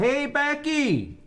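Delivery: yelling really loud. Calling for a housemate named Becky: yelling really loud. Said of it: "I'll yell one time".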